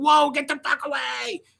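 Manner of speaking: shrill, high-pitched screaming. Acting out a reaction to a dog jumping on the bed: acting out screaming at the dog. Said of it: "I'd be screaming".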